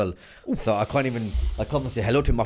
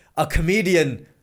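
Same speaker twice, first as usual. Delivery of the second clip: loud, high, heckling shout; 7 semitones higher, 5 dB louder than usual. Retelling what a guy shouted from the audience: imitating an audience member shouting. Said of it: "This guy shouts out from the audience".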